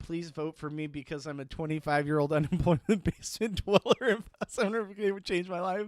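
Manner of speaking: earnest, pleading, begging tone. Imitating a contestant asking for votes: imitating Vince pleading. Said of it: "If I was Vince, I would say".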